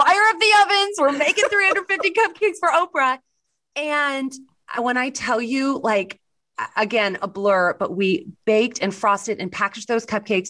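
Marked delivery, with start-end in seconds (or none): 0.0-3.2 high-pitched excited yelling. Recounting calling to the back of the kitchen, the speaker is retelling a shout. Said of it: "I yelled at the back of the kitchen".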